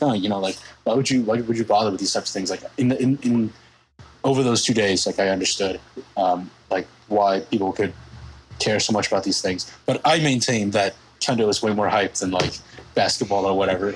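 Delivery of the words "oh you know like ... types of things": acted out, dismissive, condescending, looking down on everything. Retelling own past view of sports: imitating own past dismissive tone. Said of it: "I've always looked down on for other people".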